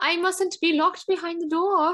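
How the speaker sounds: very high put-on cat voice, English accent. Voicing the cat that keeps trying to escape the bedroom: put-on english accent. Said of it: "my cat clearly has an English accent".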